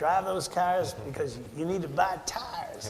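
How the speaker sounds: badly done, put-on Tennessee accent. Speaker quoting the tire company chairman's saying, in a bad Tennessee accent. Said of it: "Terrible Tennessee accent, I apologize".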